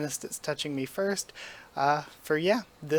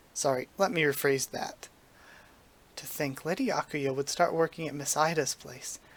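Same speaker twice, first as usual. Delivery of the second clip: plain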